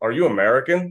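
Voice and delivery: put-on heavy, broad, thick German accent. Retelling a man passing the speaker outside a grocery store: thick German accent. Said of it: "in a very thick German accent".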